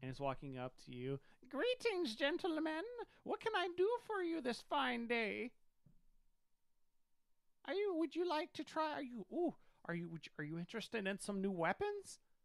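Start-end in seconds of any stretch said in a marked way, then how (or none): 1.5-12.2 very high, animated, swooping female goblin voice. Narrating a scene, the speaker voices a goblin woman greeting the gentlemen: goblin woman voice. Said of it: "a goblin woman walks up to you".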